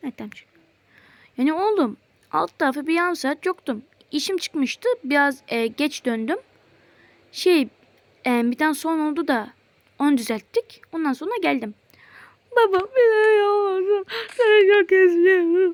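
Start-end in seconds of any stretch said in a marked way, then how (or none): 12.6-15.7 loud, slow, tearful sobbing, words dragged out. A son speaking to his father on the phone, crying. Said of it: "sakin sakin ağlama".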